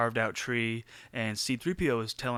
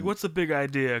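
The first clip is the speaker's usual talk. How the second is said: put-on attitude voice, higher; 4 semitones higher, 3 dB louder than usual. Retelling a movie scene where Han pushes away spears: imitating Han with attitude. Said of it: "kinda attitude".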